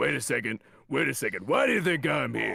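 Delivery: rumbling voice like a foghorn. Showing the impression he discovered while in his booth: Husk impression, foghorn-like. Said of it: "you sounded like you were doing an impression of the like SpongeBob like foghorn".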